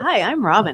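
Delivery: loud, excited voice. Demonstrating how to say their names when introducing themselves, said all exciting. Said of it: "say it all exciting".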